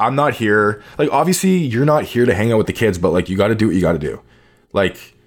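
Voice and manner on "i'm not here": usual speaking voice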